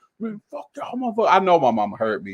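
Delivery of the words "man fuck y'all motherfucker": mock tearful cursing, pitched higher and quieter. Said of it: "Crying. Cussing".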